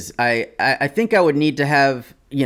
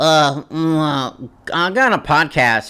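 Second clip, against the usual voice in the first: really nasal, exaggerated, very slow, drawn-out American voice. Showing how Americans sound to others, in an exaggerated nasal American voice. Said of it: "we're like really nasally. We sound like this".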